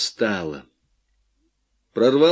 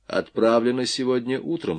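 ordinary delivery, nothing marked

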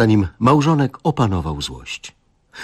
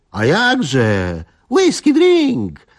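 proud crowing, swooping, jakże drawn out; 8 semitones higher than usual. Young Kalina chimes in at the table, crowing. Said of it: "Zapiał młody Kalina".

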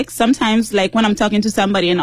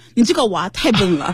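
speaking in Shanxi dialect. Explaining how she used to talk, demonstrating a sentence in Shanxi dialect. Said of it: "But in Shanxi dialect".

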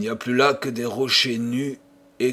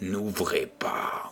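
ghostly, sepulchral whisper; 5 semitones lower, 8 dB quieter than usual. The host, standing behind the narrator, warns him, voice from beyond the grave. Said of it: "d'une voix d'outre-tombe".

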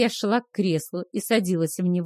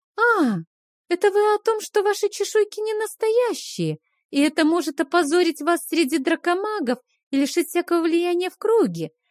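put-on carefree, nonchalant tone, pitched very high; 10 semitones higher than usual. The narrator answers the hissing Keikhar; feigned nonchalance. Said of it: "С напускной беззаботностью отозвалась я".

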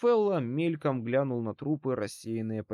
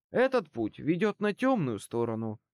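plain

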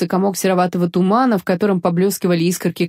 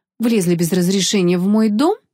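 plain

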